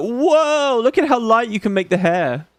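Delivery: acted excited, amazed tone. Retelling own first reaction to the hair options: imitating own past excitement. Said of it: "I remember being like".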